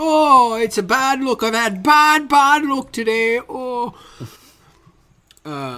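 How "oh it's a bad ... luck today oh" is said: very high, very slow, badly done Irish brogue. Joining in mocking an actor's Irish accent from a remake: bad put-on Irish accent. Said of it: "an Irish accent".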